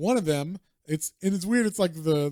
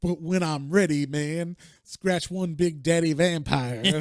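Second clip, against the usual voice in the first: delivery in jive slang talk. Reading a comic character's inner monologue aloud: jive talk. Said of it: "he's definitely talking jive".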